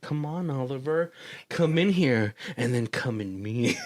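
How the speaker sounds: mock flirty, seductive come-hither voice. Retelling how a virtual character named Sheila was putting it on: imitating a flirty come-on. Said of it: "Sheila is, like, putting it on".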